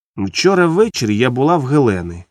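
ordinary delivery, nothing marked

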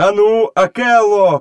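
high-pitched, urgent shout. In a read story, a character calls to another to drive the herd, shouted. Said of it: "крикнув Мауглі".

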